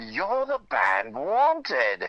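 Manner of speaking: put-on lilting, sing-song, slow British accent. Retelling what a stranger in a hotel hallway said: British accent. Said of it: "with a great British accent".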